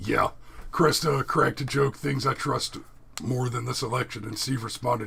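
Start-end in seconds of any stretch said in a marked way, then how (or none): none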